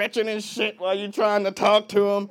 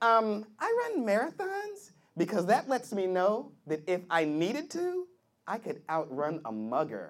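put-on soft, light young female voice; 9 dB quieter than usual.

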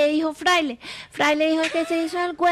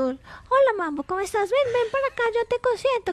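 higher-pitched, warm, affectionate coaxing voice. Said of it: "Entonces tú".

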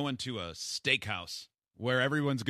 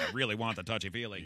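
mock disappointed reporter-style tone. Imitating a reporter who asks about touchy-feely stuff: imitating a disappointed reporter. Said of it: "You can hear the disappointment in the reporter's question".

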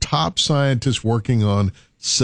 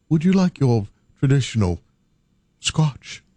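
posh British butler voice, slower. Offering a drink to someone who says he doesn't drink, in a proper British butler voice. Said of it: "proper British valet or butler".

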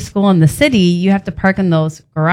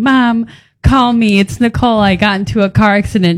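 crying hard, bawling, sobbing through every word. Speaker re-enacting her answering-machine message to her mom, retelling bawling on a message. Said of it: "bawling my eyes out".

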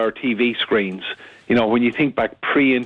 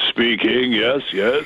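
big, full, booming voice. Retelling a phone call where Attenborough answered: imitating Attenborough's booming voice. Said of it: "this big booming voice said".

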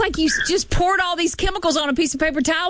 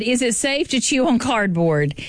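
ordinary talk

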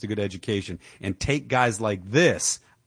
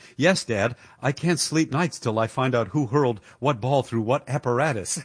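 acted, utterly dry, sardonic, mocking deadpan. Retelling Niles answering his dad about a sports radio program: retelling Niles's deadpan. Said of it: "in his usual deadpan".

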